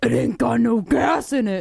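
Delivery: rough, creaky, very slow, drawn-out drawl. Taking a guess at a movie character's voice: guessing a movie guy's voice. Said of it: "I'm gonna take a guess at this voice".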